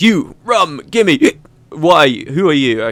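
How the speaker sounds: put-on very slow sozzled drunk drawl, unconvincing hiccup. Voicing a very drunk character's lines, drunk with a hiccup. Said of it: "I did a very unconvincing hiccup there".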